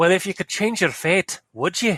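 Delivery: put-on Scottish accent. Reading a quote aloud, in a mock Scottish accent. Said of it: "I was mocking up a Scottish accent".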